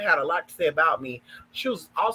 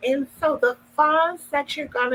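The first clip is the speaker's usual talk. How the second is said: mock damsel-in-distress voice, higher pitch; 9 semitones higher than usual. Imitating a woman's damsel-in-distress voice while she begs for money: imitating her damsel-in-distress accent. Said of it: "she had this other accent where she's just like".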